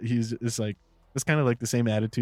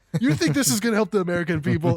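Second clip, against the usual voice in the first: put-on screaming, higher; 9 semitones higher, 4 dB louder than usual. Acting out an imagined TV argument between two hosts: imitating someone screaming. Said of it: "they're just screaming".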